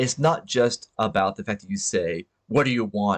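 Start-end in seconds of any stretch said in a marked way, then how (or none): 2.5-3.2 sour, resentful, angry, bitter delivery. Showing how tone changes a simple question, angry, bitter voice. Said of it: "in this uh, angry, bitter voice".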